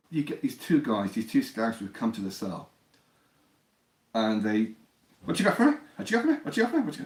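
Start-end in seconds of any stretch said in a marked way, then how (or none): 5.2-7.0 very high put-on Irish accent, rattled off fast. Recounting two scouts who came to his cell, in an Irish accent. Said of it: "They always try and do the Irish accent".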